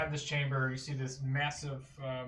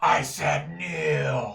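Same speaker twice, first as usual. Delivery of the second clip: very loud, booming, rough, commanding goddess voice; 10 dB louder than usual. Voicing the goddess demanding again that the party kneel: echoing commanding goddess voice. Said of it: "you hear this voice just echoing from around you".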